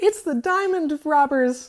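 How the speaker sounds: very high, shrill, squawking bird voice. Reading a story aloud, voicing Glinda Feathers, squawking Glinda Feathers voice. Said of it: "I adjusted the voice".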